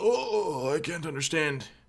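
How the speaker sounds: put-on confused old man voice. Joking about a confusing new stream layout: impression of an old man. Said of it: "That's my impression of old men".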